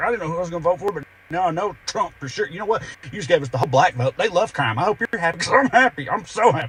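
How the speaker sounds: high, teary, forced cheer through gritted teeth. Speaker mimics people claiming they're thrilled at the outcome, mock cheer through gritted teeth. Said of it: "claiming through gritted teeth and teary eyes".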